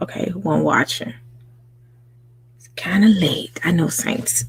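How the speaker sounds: soft whispered speech. Greeting the first viewers on a late night live stream: whispering. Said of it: "Why am I whispering?".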